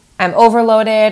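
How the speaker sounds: normal talking voice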